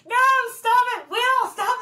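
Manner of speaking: screaming very high, shrill, very loud. Two people act out a frustrated spotter addressing will, imitating a spotter yelling. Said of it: "Just yelling".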